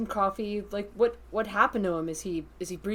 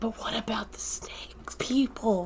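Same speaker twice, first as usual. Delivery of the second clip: whisper that is too loud, carrying. In a role-play scene, a player whispers a question to the group: loud whisper. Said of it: "I'm like whispering, but it's probably loud".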